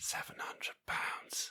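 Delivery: hushed, very soft whisper under the breath. Revealing the price of a bottle: whispered. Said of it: "I'm going to say this in a whisper".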